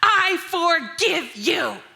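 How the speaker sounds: put-on high, loud, spiteful, venomous tiny child's voice. Mother quotes her crying three-year-old, imitating a venomous tiny voice. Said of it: "staring me down with venom in her tiny voice".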